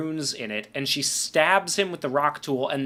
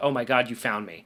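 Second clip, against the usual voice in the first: put-on nervous man's voice, lower pitch; 4 semitones lower than usual. Retelling a film scene where a son is found: imitating a nervous man. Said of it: "he's all nervous about".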